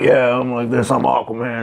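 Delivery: huge, big, gruff tough-guy voice. Describing a character who talks gruff but screams high, in a gruff Aquaman voice. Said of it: "he's this huge gruff talking guy".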